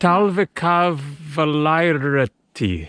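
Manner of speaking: slow, careful pronunciation. Showing a learner how to say a finnish word, slow, careful pronunciation. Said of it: "Go slow".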